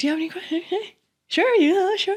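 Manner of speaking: very high, overly eager, acted-out tone. Retelling a man handing out Scientology pamphlets, imitating a smiling man. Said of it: "He was smiling".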